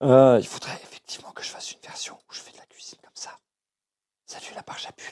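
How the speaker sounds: very gentle hushed whisper.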